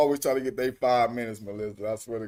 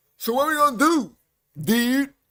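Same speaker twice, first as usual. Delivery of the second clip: put-on street voice, pitched very high; 5 dB louder than usual.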